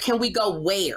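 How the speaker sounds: put-on threatening, smiting tone. Retelling what Earlene asked a suitor: Earlene's "I will smite thee" tone. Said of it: "Like that".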